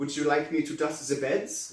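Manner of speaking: clumsy, badly done put-on French accent. Retelling how a woman in a French maid outfit came in speaking: bad French accent. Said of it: "comes in as flipping in a French accent".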